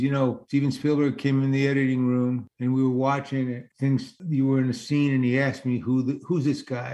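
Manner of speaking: usual speaking voice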